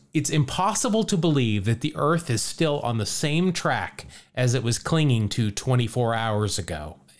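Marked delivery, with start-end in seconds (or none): none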